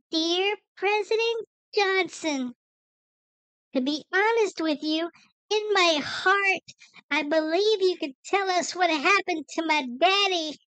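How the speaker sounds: put-on young girl's voice. Read out a little girl's 1967 letter to President Johnson in a little girl voice. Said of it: "attempt to recreate the voice of this young lady".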